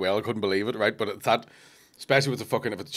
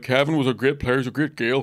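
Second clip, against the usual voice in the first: put-on emotional voice, pitched much higher; 4 semitones higher, 4 dB louder than usual. Retelling a man at a Gaelic club talking about a dead player, imitating him getting emotional. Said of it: "he's getting all emotional".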